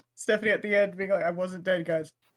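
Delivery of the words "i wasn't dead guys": acted, low, dead-flat deadpan with no reaction. Retelling a player's line at the end of the game: imitating a deadpan line. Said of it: "that was just complete deadpan".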